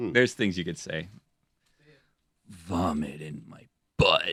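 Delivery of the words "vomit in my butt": deep, very slow, sultry raspy drawl. Testing whether anything sounds hot said this way, a speaker tries a line: sexy, deep, raspy, slow voice. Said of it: "sexy, deep, raspy, slow voice".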